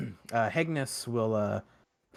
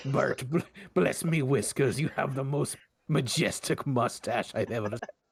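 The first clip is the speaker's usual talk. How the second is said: Scottish pirate voice, higher; 4 semitones higher than usual. Voicing a character flirting with Bert over drinks: Scottish pirate accent. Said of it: "Scottish pirate".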